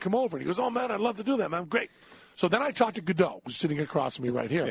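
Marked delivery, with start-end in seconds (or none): 0.6-1.6 put-on Spanish-tinged accent, pitched up. Retelling inviting a man to a barbecue and his reply, in a Cheech Marin voice. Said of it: "he sounds exactly like Cheech Marin".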